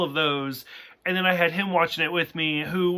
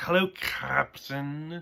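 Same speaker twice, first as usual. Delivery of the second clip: purring, seductive come-on voice; 3 semitones lower, 7 dB quieter than usual. Describing a cartoon cat character who purrs: purring seductive M'Ress voice. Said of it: "she purrs. She's like".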